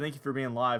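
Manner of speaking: plain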